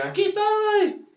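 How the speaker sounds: put-on high, slow child's voice.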